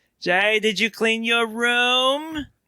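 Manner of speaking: "room" drawn out, slow and deliberate. Voicing a mother asking Jay about his room: George's mother voice. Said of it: "That's more of George's mother".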